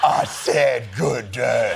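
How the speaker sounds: very slow, deliberate, drawn-out, deep voice. Speaker performing a quoted line in a deeper voice.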